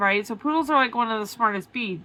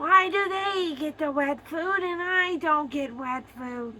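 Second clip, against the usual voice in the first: raspy little animal voice, pitched up; 6 semitones higher than usual. Speaker demonstrates their pets' voices for listeners; Pie's raspy voice. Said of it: "That's Pie".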